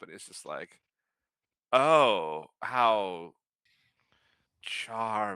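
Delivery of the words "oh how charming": snooty, disdainful, nose-in-the-air condescension. Voicing a guard who turns his nose up at a player: disdainful. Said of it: "he sort of turns his nose up".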